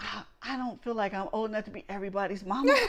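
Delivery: whispered delivery. Retelling what was whispered to a son: retelling a whisper. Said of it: "whispering to my son".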